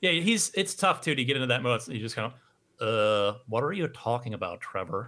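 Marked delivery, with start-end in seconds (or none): 3.5-5.1 put-on cartoon teenager voice. Asked about the impression you did on your podcast, get into that mode: Butt-Head impression. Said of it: "you do a pretty good impression of uh, Butthead".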